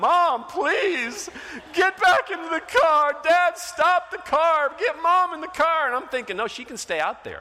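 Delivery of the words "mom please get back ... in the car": loud, high-pitched, tearful, crying begging. A father retells his son pleading through the car window, imitating Taylor crying. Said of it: "and he's crying".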